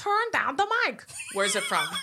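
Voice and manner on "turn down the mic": put-on very high-pitched, deliberately terrible Italian accent. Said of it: "she has a terrible Italian accent".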